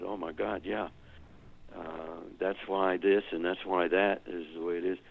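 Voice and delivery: ordinary talk, nothing marked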